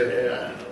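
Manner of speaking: low, soft sigh of relief.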